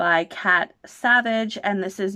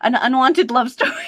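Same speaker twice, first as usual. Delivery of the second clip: rattled off fast, raised and higher pitched; 6 semitones higher, 5 dB louder than usual. Reading a book title aloud while struggling not to laugh: said fast. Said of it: "I'm gonna just say it fast".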